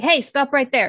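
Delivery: rough, hostile, fast, gruff aggressive bark. Game master voices someone stopping the players' sneaking characters: gruff, aggressive voice. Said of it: "a very gruff, aggressive voice say".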